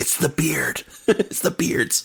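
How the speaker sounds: quiet whispered words. Retelling a story, quoting what one character whispered to another, retelling a whisper. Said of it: "he whispers".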